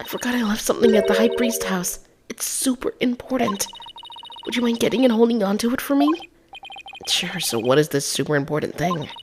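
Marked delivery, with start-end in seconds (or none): 0.0-6.1 quiet, raised-pitch whisper. A character asks another to fetch something from the high priest house, whispering. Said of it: "but why are we whispering?".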